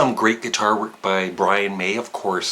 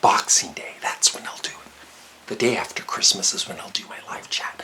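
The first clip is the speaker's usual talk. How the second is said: speaking in a whisper. Telling viewers about upcoming plans, the speaker is whispering. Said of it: "I don't know why I'm whispering".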